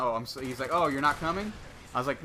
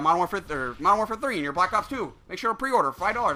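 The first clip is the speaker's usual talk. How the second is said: mock robotic, rote delivery, higher and louder; 6 semitones higher, 4 dB louder than usual. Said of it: "spit that out like a fucking robot".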